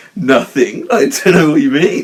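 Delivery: very loud, high schoolgirl giggling. Retelling own answer to parents asking questions: imitating own giggling. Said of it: "giggling like a little schoolgirl".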